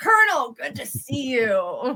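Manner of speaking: falsely polite, slow, sing-song sarcasm. Greeting the colonel in character with a salute, sarcastic greeting. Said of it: "another sarcastic salute to him and be like".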